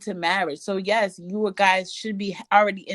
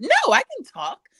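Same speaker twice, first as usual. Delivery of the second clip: put-on high, fast, eager girly voice. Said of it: "she gets this call".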